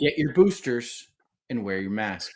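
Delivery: plain, clear, direct voice. Speaking to the show's listeners: clear and loud voice. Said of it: "in a clear and loud voice".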